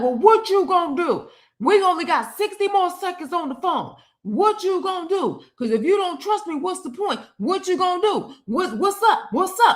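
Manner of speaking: acted, high, taunting, tough-talking tough-guy voice. Retelling an argument on the phone, imitating someone acting hard. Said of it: "now you wanna act hard".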